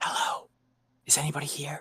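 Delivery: hushed, theatrical whisper, projected to carry. A player's character moves toward the sound of crying and calls out: stage whisper. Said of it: "in a stage whisper".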